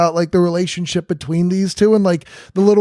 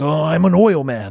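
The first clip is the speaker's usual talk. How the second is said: slow, deliberate, drawn-out oil-man voice; 2 semitones lower than usual. Describing a film character's way of talking: Daniel Plainview voice. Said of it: "the voice he's using in that movie".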